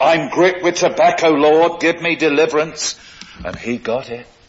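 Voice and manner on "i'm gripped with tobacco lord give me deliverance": very loud, raised, high-pitched crying out. Speaker recalling a man who stood up after a prayer of confession, retelling a loud voice. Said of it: "a man got up with a loud voice".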